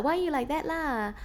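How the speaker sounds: put-on Malaysian English accent, sentences tagged with la. Imitating the mum's Malaysian lady friends at Sunday tea; Malaysian English accent. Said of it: "they're all talking like this la".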